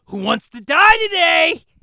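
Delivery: very high, shrill, loud war-cry taunt. Yelling a challenge across the room at two enemies: yelling a battle taunt. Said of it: "I'm gonna yell across to him".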